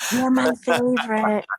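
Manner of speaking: whispered voice. Retelling touching a tree and whispering to it: whispering to a tree. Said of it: "I touch the tree and I whisper".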